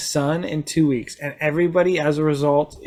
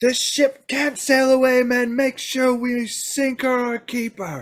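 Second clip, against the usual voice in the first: commanding battle yell, pitched up; 8 semitones higher than usual. As the pirates draw their swords, Captain Gallows yells to his men. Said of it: "The pirates draw their swords and the [name] yells, / He looks at you and he says".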